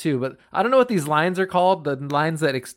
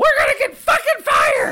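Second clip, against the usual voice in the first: put-on puppet pig voice, higher and louder; 5 dB louder than usual. Imagining Tom Cruise as Miss Piggy, ranting: Miss Piggy voice. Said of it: "imagine Tom Cruise as, like, Miss Piggy being like".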